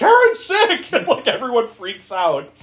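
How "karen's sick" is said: put-on shrill, very high-pitched panicked screaming. Retelling a scene where he learns she is sick: imitating someone screaming. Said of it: "he's screaming".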